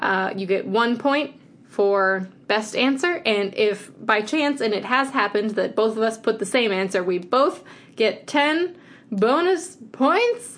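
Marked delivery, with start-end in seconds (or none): 7.0-10.6 high, slow, rising questioning tone. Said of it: "You said that like a question".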